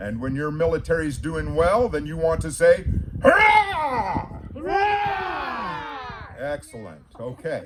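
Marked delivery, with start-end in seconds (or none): 3.2-6.4 very high, shouted, rallying hurrah. Telling Alba what to shout when the military does well: cheering. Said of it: "you're going to have to be able to cheer".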